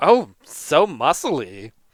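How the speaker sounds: flirtatious, giggling through words, swooping sing-song. Voicing a woman who giggles and grabs the player: giggling flirtatious woman. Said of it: "She giggle-, giggles".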